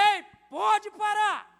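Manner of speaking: very loud, authoritative yelling shout. Retelling stopping a man going at his wife: retelling a shout. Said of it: "aí eu gritei".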